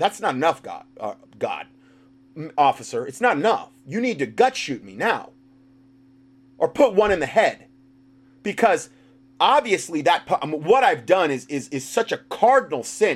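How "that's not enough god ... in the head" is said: usual speaking voice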